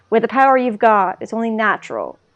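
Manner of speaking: usual speaking voice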